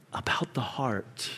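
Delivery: soft, hushed, dropped whisper.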